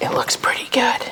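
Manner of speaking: high, soft, excited whisper. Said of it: "Why am I whispering?".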